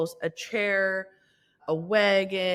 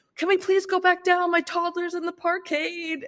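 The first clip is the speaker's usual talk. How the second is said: mock frantic, panicked pleading, very high; 10 semitones higher, 4 dB louder than usual. Retelling a chaotic elevator ride with her crying toddler below, the speaker repeats her panicked plea. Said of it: "and I'm panicking".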